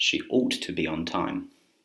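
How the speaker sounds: normal talking voice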